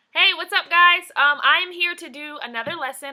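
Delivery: very loud, high-pitched yell. Opening a video lesson for viewers, yelling. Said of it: "I don't know why I'm yelling".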